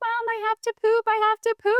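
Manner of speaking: put-on very high scream like a six-year-old. Retelling a six-year-old knocking at the door during a test: imitating a child screaming. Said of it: "screaming in the background".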